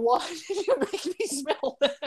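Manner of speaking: mock very high, shrill, sudden yell. Speaker retells how a woman reacted after being asked to smell something: imitating someone yelling. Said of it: "she just yells at me like".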